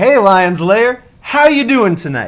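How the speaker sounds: very loud, high-energy, full of gusto. Showing how to grab an audience's attention: louder, with more gusto. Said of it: "a little bit louder with a little bit more gusto".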